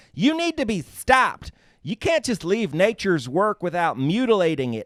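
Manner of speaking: mock outraged, indignant tone, high and slow.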